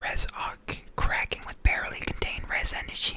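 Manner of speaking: whispering to himself in a reading tone. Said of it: "I'm just whispering in my head".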